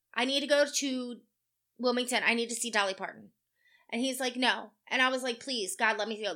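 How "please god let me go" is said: put-on tearful crying, pleading tone, lower pitch. Woman retelling begging her boss for a long lunch, retelling crying, begging. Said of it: "I'm literally crying to this man".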